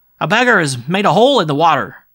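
shrill, very loud shout. A street urchin runs past the blind man without stopping, shouting. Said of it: "shouted without stopping".

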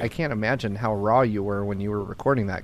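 plain

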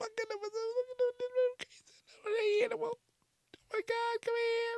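put-on very high, hushed, cutesy baby talk. The speaker shows how everyone talks on seeing a cute animal: high voice for cute animal. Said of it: "your voice gets all high".

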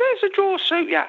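high-pitched, squeaky little voice. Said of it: "in that squeaky voice he had".

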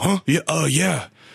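put-on grunting and groaning. Retelling a man in pain answering an offer of help, imitating his grunting and groaning. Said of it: "almost grunting and groaning like his words".

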